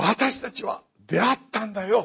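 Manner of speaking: high, loud, eager, thrilled exclamation. Acting out people who met the long-awaited Messiah, mock-excited. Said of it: "こういう感じです。わかりますね。この興奮ぶりというのが。".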